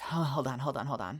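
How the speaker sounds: put-on out-of-breath voice. Retelling own past words while talking too fast: imitating being out of breath. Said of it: "I'm out of breath".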